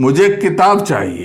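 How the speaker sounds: किताब stressed and leaned into. Hindi lesson on sentence stress, stress on 'किताब'. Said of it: "यहां किताब पे बलाघात हो रहा है".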